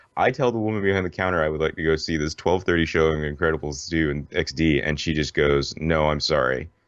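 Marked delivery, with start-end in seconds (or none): 5.7-6.6 mock blunt, curt delivery. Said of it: "this woman's just, like, bluntness".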